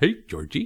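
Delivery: high, loud, overly cutesy, cartoonish voice. Describing a film's terrifying clown, imitating his overly cutesy Pennywise voice. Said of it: "overly cutesy, cutesy Hanna-Barbera kind of voice".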